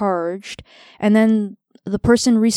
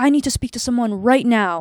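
mock-angry tone, faster pace; 2 semitones higher than usual. Retelling a phone call that interrupted treatment, imitating an angry caller. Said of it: "And he's like very angry".

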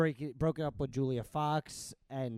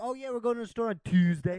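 put-on casual, raised, pitched-up Baltimore accent; 8 semitones higher, 5 dB louder than usual. Telling a friend how people there say Tuesday, Baltimore accent. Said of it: "Have you ever heard a Baltimore accent?".

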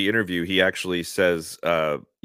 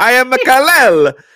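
very loud, very high, slow put-on Italian accent; 11 dB louder than usual. Joking about an actor playing Superman: put-on Italian accent. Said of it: "he's a good at talking like this".

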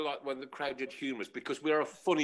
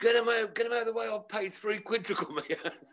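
put-on, high-pitched football terrace crowd shout; 7 semitones higher than usual. Retelling a football match where a fan behind shouted: imitating a man shouting. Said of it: "the guy behind me is shouting".

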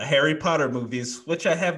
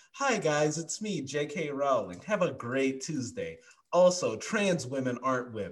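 slow, even and cheerful voice; 6 dB quieter than usual. Mocking a public figure's sudden posts: imitating J K Rowling. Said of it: "she'll just come out of nowhere".

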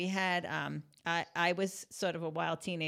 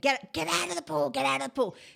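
frantic, ragged, high raspy screaming; 9 semitones higher, 7 dB louder than usual. Retelling how a friend's mother woke and yelled from the window: imitating a mother screaming.

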